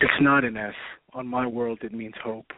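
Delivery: very deep, low heroic voice. Caller asked for a Batman voice on a call-in show does this instead: Superman impression. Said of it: "Give us your best Batman voice".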